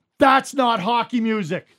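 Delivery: dead serious, slow, loud, angry. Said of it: "he was dead serious, and he was angry".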